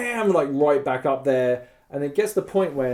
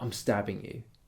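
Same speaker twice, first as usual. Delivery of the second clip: very quiet, very soft, barely voiced whisper; 5 semitones lower, 11 dB quieter than usual. Retelling what a man said during a face-to-face argument: imitating someone whispering. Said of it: "whispers to me".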